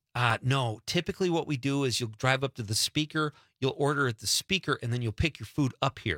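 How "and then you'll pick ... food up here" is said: ordinary talk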